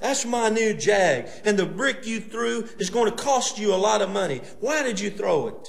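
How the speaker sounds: very high, loud, steadily building angry rant. A car owner confronts the person who threw a brick at his new car: building up a head of steam. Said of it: "Building up a head of steam".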